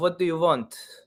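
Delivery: put-on Eastern European accent. Showing how the accent slips into a plain question: Uncle Ivan accent. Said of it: "when I'm using the accent".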